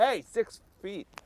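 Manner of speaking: shrill, very high-pitched yell. Acting out telling a grocery store whisperer off: pretend yelling. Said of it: "And then I yell".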